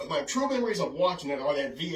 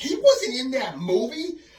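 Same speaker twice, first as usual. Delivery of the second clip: very high, loud, slow, stretched-out shocked disbelief. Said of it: "I'm like".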